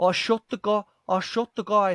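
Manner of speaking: put-on slight South African accent. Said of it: "South African there".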